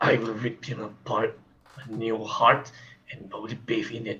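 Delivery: dark, deep, hushed, menacing voice. Speaker says what they would do if he comes back, in a dark, deep voice. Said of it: "I use my dark, my deep tone voice".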